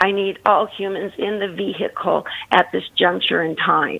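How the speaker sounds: mechanical, machine-like robotic voice. Retelling how her husband talks when angry: imitating husband's robot voice. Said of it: "he talks like a robot".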